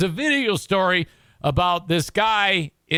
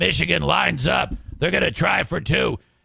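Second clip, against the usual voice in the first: put-on raspy whiskey-voiced play-by-play announcer voice, faster. You are showing how a play-by-play man calls a michigan two-point try, in a raspy whiskey voice. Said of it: "he's got like a raspy whiskey voice".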